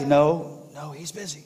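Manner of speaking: put-on slow, soft half-whisper, like a small boy. Retelling a joke where a little boy answers the phone: imitating a half-whispering little boy. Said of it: "the little boy was kinda whispering".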